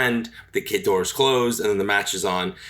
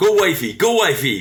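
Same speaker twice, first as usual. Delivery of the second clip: mock excited cheering yell, loud and high; 6 semitones higher, 6 dB louder than usual. Retelling a man behind them who kept yelling at Liv Morgan, retelling a yell. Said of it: "he kept yelling".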